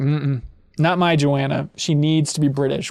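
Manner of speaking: ordinary talk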